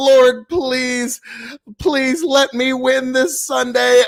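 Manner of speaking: put-on, begging, pleading voice. Mocking the other speaker as he prays to win Sunday: mock praying. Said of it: "He's praying".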